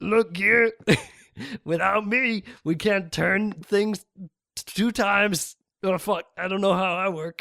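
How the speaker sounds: put-on drunk character voice. Acting a scene where Counter Gear speaks to Gear, drunk Counter Gear voice. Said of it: "He's drunk".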